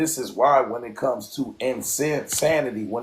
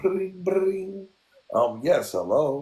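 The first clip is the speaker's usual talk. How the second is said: put-on, fake polite professional voice; 6 semitones higher than usual. Showing how you switch up your voice to get a job, in a fake job-applicant voice. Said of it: "Let me try to act like I'm about to get a job".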